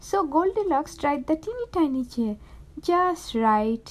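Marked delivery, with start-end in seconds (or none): 2.8-3.9 sighing, lower pitched. Settling down into the teeny tiny chair, with a sigh. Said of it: "she sighed".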